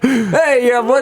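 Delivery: put-on clumsy, failed American accent. Imitating how americans would react, in a bad american accent. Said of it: "I can't do an American accent".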